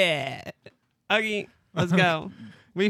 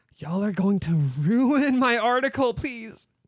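loud, urgent whisper-yell, higher pitch; 4 semitones higher than usual. Voicing a character who addresses two others in a game, whisper-yelling. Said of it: "she literally like whisper yells to them".

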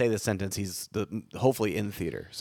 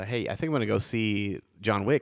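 usual speaking voice

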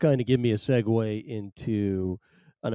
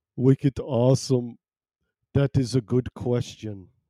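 put-on Scandinavian-accented speech; 4 dB louder than usual. Speaker quotes a man from Denmark or Sweden, in a Scandinavian accent. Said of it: "Some sort of Scandinavian accent".

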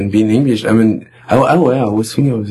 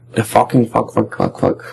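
put-on British accent; 3 dB quieter than usual. Joking that an english guy swears every two words, imitating one: british guy impression. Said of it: "Is that your impersonation of a British".

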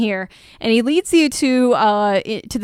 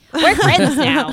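creature voice, parroting echo, pitched up; 5 semitones higher than usual. Voicing a Kenku that parrots a player's words back. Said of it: "Kenku can repeat what they hear".

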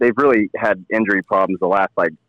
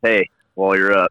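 put-on voice, talking out of the side of mouth. Imitating a neighbor asking someone leaving the table for a beer: imitating Terry Cleek. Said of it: "I love the Terry Cleek impersonation".

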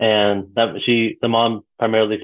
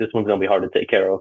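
mock whispering. Retelling what the girlfriend's mom whispered to her daughter: imitating someone whispering. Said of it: "whispers to her daughter in Nepali".

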